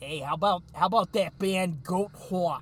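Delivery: put-on New York accent. Retelling what a drunk guy on stage said about a band, thick new york accent. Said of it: "he's got this fucking thick New York accent".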